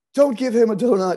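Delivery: loud, high-pitched shouted yell. Retelling an ex-wife yelling after a kids' rugby game: imitating ex-wife yelling. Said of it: "my ex-wife started yelling at him and yelling at me".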